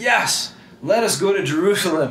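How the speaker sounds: eager, can't-wait tone. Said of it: "they're all excited".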